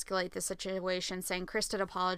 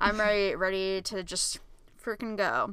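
usual speaking voice

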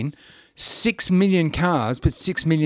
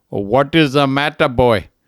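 put-on Indian accent, loud; 5 dB louder than usual. Telling a joke, voicing the doctor from India, in an Indian accent. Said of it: "said in every Indian accent".

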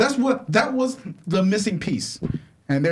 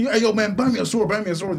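ordinary talk, nothing marked

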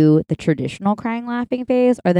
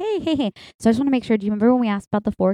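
put-on passive-aggressive tone, higher; 4 semitones higher than usual. Retelling how a friend spoke to a waiter about a fork: imitating a passive-aggressive friend. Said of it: "passively aggressively".

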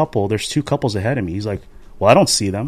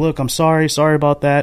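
re-enacted yell, higher pitch; 4 semitones higher than usual. Retelling apologising to golfers they nearly hit: retelling a yelled apology. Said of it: "I'm yelling like".

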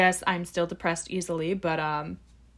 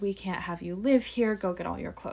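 ordinary delivery

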